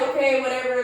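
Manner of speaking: ordinary talk, nothing marked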